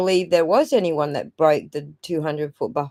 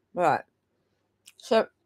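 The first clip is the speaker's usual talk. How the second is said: speaking with a mouth full of food; 4 dB quieter than usual. Caught with a mouthful during an interview, talking with mouth full. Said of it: "I got a mouthful".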